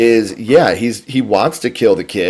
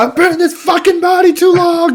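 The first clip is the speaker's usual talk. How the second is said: mock very high, screeched screaming outburst; 4 dB louder than usual. Retelling a movie scene where the ritual fails: imitating Chucky yelling. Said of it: "he starts screaming and he's yelling".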